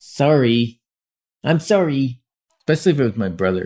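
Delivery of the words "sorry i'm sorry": put-on childish voice, apologetic. Retelling being told to say sorry as a child: imitating own childhood apology. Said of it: "I'd put my face down so I didn't make eye contact and I'd go".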